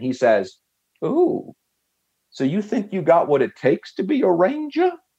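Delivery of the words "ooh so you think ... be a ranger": put-on, high, a bit too grating Southern drawl. Retelling what a man said before Ranger school, imitating grating Southern drawl. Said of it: "that Southern brawl accent".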